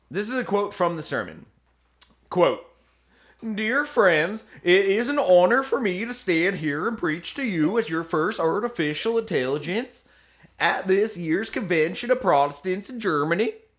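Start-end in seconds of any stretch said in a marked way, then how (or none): 3.6-13.6 put-on Swedish accent. Speaker quoting an AI-written sermon from a Protestant convention, put-on accent. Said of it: "I didn't make the accent up".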